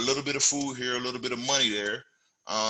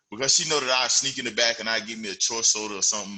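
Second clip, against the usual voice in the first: plain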